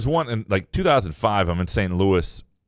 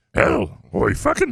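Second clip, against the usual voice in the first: creaky, raspy, pitched-up voice; 6 semitones higher than usual. Suggesting a reordered version of the shout: Yoda version. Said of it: "You could do a Yoda version".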